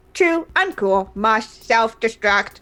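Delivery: robotic voice. Voicing a dancing robot that decides to self-destruct: robot voice. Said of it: "you hear it say".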